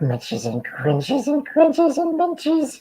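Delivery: very high-pitched put-on critter voice. Talking about doing voices, demonstrate the one he kept doing: put-on creature voice. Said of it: "I just kept doing that voice".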